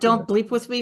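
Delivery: plain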